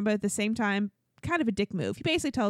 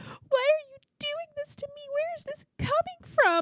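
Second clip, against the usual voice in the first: put-on tearful sobbing, very high-pitched. Speaker acts out how she reacted when he said he was leaving, imitating someone crying. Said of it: "she just starts crying".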